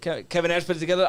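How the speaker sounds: plain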